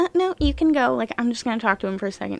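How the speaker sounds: acted offhand, nonchalant tone. Retelling what the cop said to Chris at the door: imitating a nonchalant cop. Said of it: "so nonchalant".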